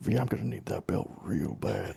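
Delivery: slow, hushed, whispered aside. Whispering in character to the group about needing a belt: whispering. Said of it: "I'm gonna whisper to the group".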